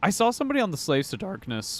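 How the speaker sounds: voice cracking. Speaker starting to tell about a Reddit post: voice cracking. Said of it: "I don't know why my voice cracked there".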